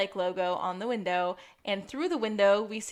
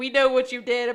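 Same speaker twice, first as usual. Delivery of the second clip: mock yelling, much louder; 3 semitones higher, 6 dB louder than usual. Recounting a scene where he yells at her to confess, retelling a yell. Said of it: "he's like yelling at her to confess".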